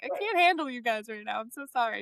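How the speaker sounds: play-acted upset, overwhelmed, near falling apart. Retelling a low moment in a long race: retelling being an emotional mess. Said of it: "like, an emotional mess".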